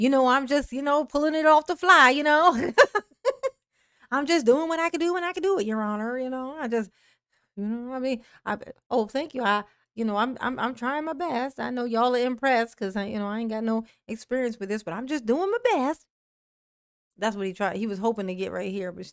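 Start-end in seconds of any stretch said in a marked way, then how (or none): 0.0-16.1 filler-laden, stumbling, halting, humble rambling speech. Retelling what Daryl said to the judge after a compliment: imitating Daryl. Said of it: "And Daryl was like".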